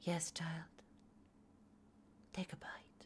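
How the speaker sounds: creepy, unsettling whisper. Imitating how a man talks to his girlfriend: imitating a creepy priest voice to a child. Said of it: "creepy priest taking care of a child type of a voice".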